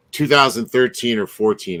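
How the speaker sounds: plain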